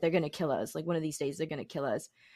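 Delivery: weepy, tearful, pleading outburst while crying. Retelling a mother's words after a car chase: imitating someone crying. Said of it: "stopped and was crying and was like".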